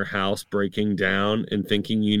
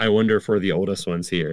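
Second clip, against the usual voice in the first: normal talking voice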